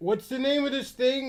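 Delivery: mocking, fumbling tone. Mocking a co-host who forgets names, mocking imitation of a co-host. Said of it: "He does this all the time where he's like".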